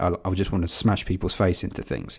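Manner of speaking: usual speaking voice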